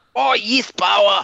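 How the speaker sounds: put-on South African accent. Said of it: "You can bring out your South African accent".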